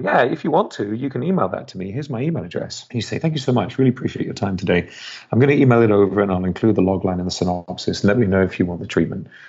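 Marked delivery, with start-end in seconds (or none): 0.0-2.9 acted polite, vague, fluffy, noncommittal tone. Describing an agent's assistant's reply to a pitch: imitating a vague tone. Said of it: "in a kind of vague way".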